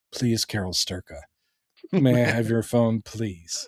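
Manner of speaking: mock, condescending, overly polite please-and-may-I tone. Retelling a scene where a character asks for a phone: imitating a patronizing request. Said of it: "it's so patronizing where he's like going".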